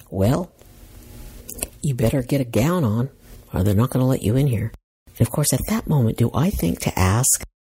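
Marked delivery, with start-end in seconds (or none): none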